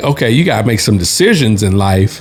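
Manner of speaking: normal talking voice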